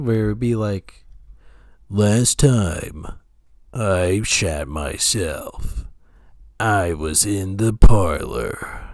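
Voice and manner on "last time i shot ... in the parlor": very slow, low, drawn-out cool-guy drawl. Talking about accents, the speaker shows off his generic cool guy voice. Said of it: "I can do like generic cool guy voice".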